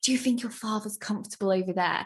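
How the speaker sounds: mock creepy whispering voice. Describing the 2009 version, a man whispers while tapping Emma: imitating a creepy whisper. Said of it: "like tapping her and like whispering".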